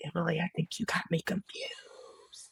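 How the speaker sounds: soft unvoiced whisper, disbelieving. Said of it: "And I'm like".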